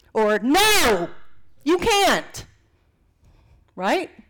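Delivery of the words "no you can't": sudden, swooping, full-on shouted yell. Speaker shows how the same words can be said two ways, yelling. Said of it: "Sorry for yelling".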